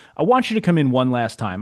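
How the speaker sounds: ordinary delivery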